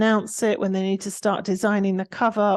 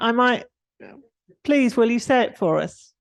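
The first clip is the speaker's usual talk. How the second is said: ordinary talk, nothing marked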